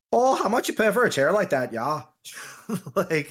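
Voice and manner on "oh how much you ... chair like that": put-on Midwestern Wisconsin accent. Quoting a character's line, the speaker puts on a Green Bay accent. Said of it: "Sounded like she was from Green Bay".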